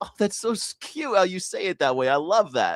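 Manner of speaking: genuinely delighted, gushing American voice. Retelling how Americans react to British words: imitating a delighted American. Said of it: "Americans be like".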